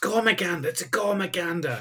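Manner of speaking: sudden, high-pitched blurted shout. Retelling a scene where Stamets runs up to others: imitating Stamets shouting. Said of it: "just sort of shouts".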